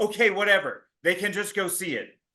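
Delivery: ordinary talk, nothing marked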